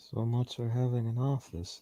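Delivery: muttered under the breath. Voicing a character muttering a remark: muttering under breath. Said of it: "you just hear Julian under his breath".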